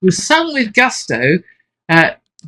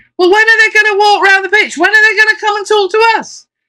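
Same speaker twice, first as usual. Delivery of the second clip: play-acted very high, shrill shout; 4 dB louder than usual. Retelling what a supporter in the crowd shouted: imitating a supporter shouting. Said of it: "a supporter in the crowd shouted at me".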